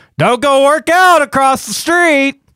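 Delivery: very high, wild, unhinged madman yelling. Recounting yelling at a guy in shorts while walking away: retelling a yell. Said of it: "so I'm yelling like a madman".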